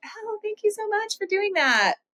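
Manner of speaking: very high, jumped-up register. Showing her voice when a man does something nice, much higher pitched voice. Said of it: "My voice goes two octaves higher to be like".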